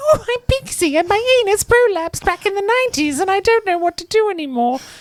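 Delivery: shrill, very high anime character voice, loud. Mocking a game's anime character Pixie, in a high-pitched Pixie voice. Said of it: "that's why she speaks so high pitched".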